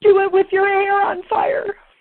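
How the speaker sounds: tearful, very high voice, close to crying. Quoting the ornament their eleven-year-old son secretly made, the speaker is near crying. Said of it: "which I can't even say this without crying".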